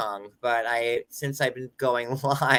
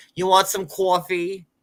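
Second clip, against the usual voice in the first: put-on thick Brooklyn accent laid on, pitched up; 6 semitones higher, 5 dB louder than usual. Retelling a TV episode about accent lessons: imitating Carrie's thick Brooklyn accent. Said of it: "Carrie's accent was so bad".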